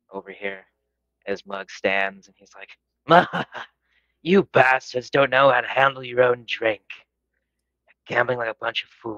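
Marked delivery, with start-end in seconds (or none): 3.0-9.2 booming laugh running through the words. Voicing a character who laughs from the corner and stands: loud boisterous laughing. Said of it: "you'll hear a loud, boisterous laugh".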